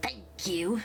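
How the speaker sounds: muttered through gritted, clenched teeth. Narrating a game, voicing the dwarf's reply, muttered through gritted teeth. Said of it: "the dwarf mutters while gritting his teeth".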